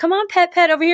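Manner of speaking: mock very high, gentle, sweet-talking coaxing voice. Retelling how the other speaker called a pig over: imitating gentle coaxing.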